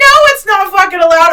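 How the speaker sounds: loud, very high-pitched yelling outburst. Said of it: "so I'm free to yell".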